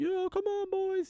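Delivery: play-acted, very high, drawn-out cheering shout. Retelling how a friend's mom cheered the team: imitating a mom shouting. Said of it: "his mom would start shouting".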